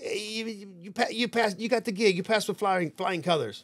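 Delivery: put-on full New York accent. Retelling a phone call from the manager the next day, imitating Big Ed's New York accent. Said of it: "full New Yorker".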